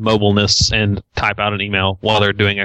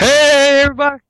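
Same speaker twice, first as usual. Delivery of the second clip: very high, loud, crazily excited voice. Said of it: "He was doing a Nathaniel impression".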